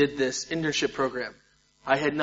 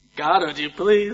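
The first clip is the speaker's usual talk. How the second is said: put-on fake crying; 4 semitones higher, 4 dB louder than usual. Retelling praying alone to God, retelling fake crying. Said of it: "I started fake crying".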